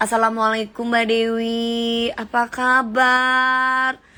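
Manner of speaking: slow, drawn-out, mock-polite delivery.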